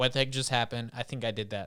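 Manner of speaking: ordinary talk, nothing marked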